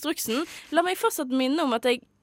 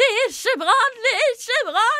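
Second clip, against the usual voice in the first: acted-out shrill, very high-pitched, loud shout; 10 semitones higher, 6 dB louder than usual. Re-enacting their own past emergency call, retelling shouting into the phone. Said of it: "jeg sto og ropte i telefonen".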